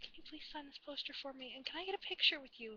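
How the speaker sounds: very quiet, soft, hushed, careful and polite voice. Retelling asking someone to sign a poster: imitating own quiet voice. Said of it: "I very quietly".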